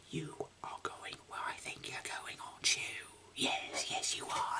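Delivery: whispered under the breath, hushed. Reading so someone downstairs won't hear, whispering. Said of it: "the only reason why I'm whispering".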